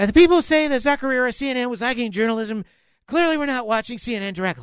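squeaky, very high helium-like voice. Reading out a quote from Brian Stelter, doing a Brian Stelter helium-voice impression. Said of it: "a voice like you on helium".

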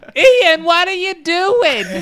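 call pitched way up, very slow. Imitating Ian's mum catching him recording under a blanket: imitating Ian's mum. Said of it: "that's how Ian's mum sounds like".

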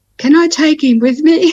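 put-on timid, sheepish voice. Retelling what Mum asked when it was time to leave, retelling Mum's sheepish request. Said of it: "she said quite sheepishly".

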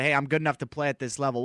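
ordinary talk

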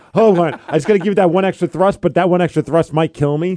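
ordinary talk, nothing marked

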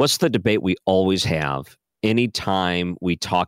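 ordinary delivery

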